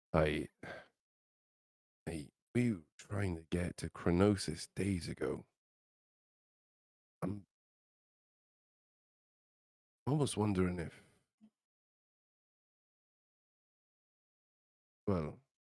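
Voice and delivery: hushed whisper, very quiet. Voicing a character who leans in to a companion: whispering very quietly. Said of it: "whispering to Kozik very, very quietly".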